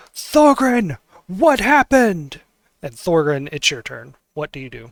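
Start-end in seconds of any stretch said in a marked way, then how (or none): 0.2-2.4 very high, shrill, loud scream. Voicing a character who screams to an ally across the room: screaming in character. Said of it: "she screams out".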